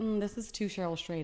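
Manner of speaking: ordinary delivery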